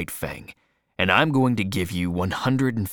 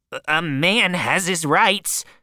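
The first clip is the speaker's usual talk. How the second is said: very high, whiny, whining, pleading voice; 10 semitones higher, 3 dB louder than usual. Narrator reads a man's protest as another man jumps at him: whining. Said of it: "said Beauty in a whining voice".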